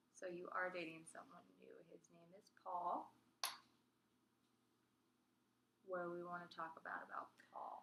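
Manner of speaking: flat monotone delivery. In a role-play, answering a partner who is dating someone new, monotone voice. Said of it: "Monotone voice".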